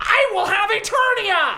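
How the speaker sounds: shrill, very high, slow, drawn-out villain shout. Voicing Skeletor leaping into the air: shouting as Skeletor. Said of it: "he shouts".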